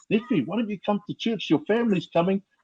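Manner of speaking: high, soft-toned, soft-spoken delivery. Retelling how his feared uncle invited him to church, imitating uncle's soft voice. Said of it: "soft voice".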